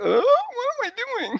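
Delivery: very high, shruggy, offhand voice. Pitching a movie poster, shrugging David Schwimmer voice. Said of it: "a shoulder shruggy David Schwimmer".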